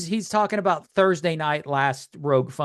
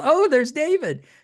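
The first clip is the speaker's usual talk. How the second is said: mock, very high, gushing starstruck fan voice; 10 semitones higher than usual. Recalling a party, imitating the listener's wife fangirling over a guest. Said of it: "your wife's fangirling over him".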